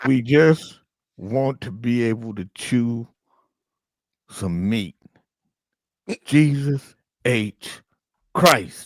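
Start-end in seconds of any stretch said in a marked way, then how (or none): 0.0-4.9 pitched-up, slow, drawn-out talking false-teeth voice. Playing Fred's dentures complaining about not being worn: voicing Fred's dentures. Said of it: "as Fred's teeth".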